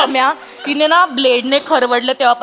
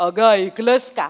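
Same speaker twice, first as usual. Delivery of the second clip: manly, deep authoritative calling voice, lower; 4 semitones lower than usual. Showing how a man should call out to his wife: manly commanding call. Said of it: "कशी हाक मारली पाहिजे?".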